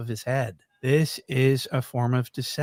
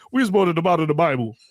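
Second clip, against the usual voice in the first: mocking funny voice, higher and louder; 4 semitones higher, 6 dB louder than usual. Mocking how a man in a clip talks: mocking imitation of his funny talk. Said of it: "he talks all funny".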